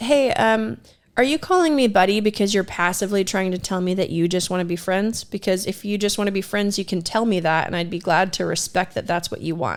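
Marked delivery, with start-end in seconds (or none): none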